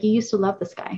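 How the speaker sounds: acted mutter, under the breath. Retelling what her three-year-old son said: imitating a remark under the breath. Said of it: "under his breath".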